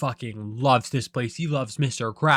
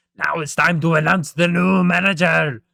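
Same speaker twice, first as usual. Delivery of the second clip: loud, put-on German-ish European accent; 5 semitones higher, 8 dB louder than usual. Retelling a ceremony scene, voicing Mr. Krabs in a German accent. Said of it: "this is more like German".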